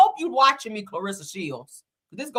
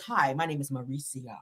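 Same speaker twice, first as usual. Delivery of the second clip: very deep, low, seductive and sexy voice; 7 semitones lower, 10 dB quieter than usual. Retelling how mauricio introduced himself to the women: sexy voice imitating mauricio. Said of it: "Real sexy, like".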